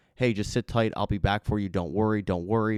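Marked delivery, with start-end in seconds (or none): none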